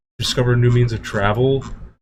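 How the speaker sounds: normal talking voice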